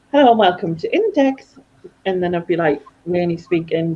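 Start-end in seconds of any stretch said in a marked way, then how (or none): 0.2-1.6 high, put-on posh telephone voice. Recalling working at Index and greeting people: posh voice. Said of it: "Do your posh voice".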